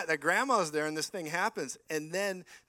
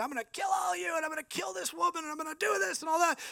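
mock shrill, very high-pitched shrieking scream; 13 semitones higher than usual. Retelling how a demonized lady screamed at everybody, imitating someone screaming. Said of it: "she started screaming at everybody".

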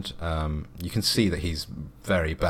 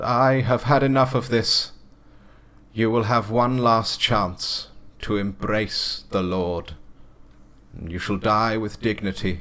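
high-pitched, screaming preacher voice; 5 semitones higher, 4 dB louder than usual. Storyteller voices the Reverend as a group trains guns on the saloon: screaming. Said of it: "the Reverend screams out".

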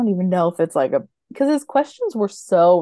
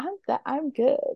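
mock smug, proud tone, higher and quieter; 7 semitones higher, 6 dB quieter than usual. Retelling a show scene about guessing a gift: imitating a proud boast. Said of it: "she was so proud of herself".

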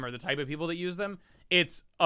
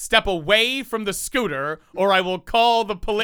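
mock-stern put-on voice, louder; 6 semitones higher, 7 dB louder than usual.

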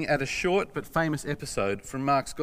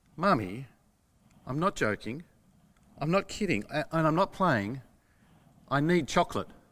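mock grave, utterly earnest, dead-serious child tone. Quoting a three-year-old asking for chocolate: imitating a child's utter seriousness. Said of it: "the utter seriousness in three-year-old Sophia's voice".

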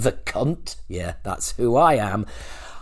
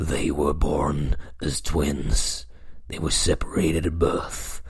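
slow movie-trailer announcer voiceover; 8 semitones lower, 5 dB quieter than usual. Asking the audience for voiceover work, showing off a movie trailer voiceover. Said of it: "This is the kind of shit I can do".

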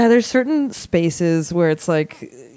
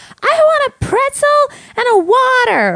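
put-on very high, drawn-out, demanding little kid's yell; 4 dB louder than usual. Retelling a six-year-old interrupting at a bar: imitating a kid yelling. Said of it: "yells at the bartender".

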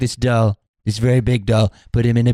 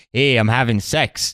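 put-on rural Canadian accent. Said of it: "that's my rural Canadian".

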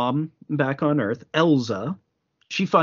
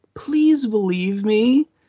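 earnest, begging, imploring plea with raised pitch; 6 semitones higher than usual. Speaker recounting a story acts out a girl begging a man, retelling an imploring plea. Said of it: "Tomoko implores Kondo".

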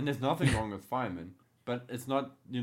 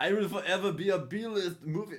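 mock Russian accent, higher; 7 semitones higher, 3 dB louder than usual. Joking about an alternate movie poster: put-on Russian-sounding accent. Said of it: "now I'm sounding Russian".

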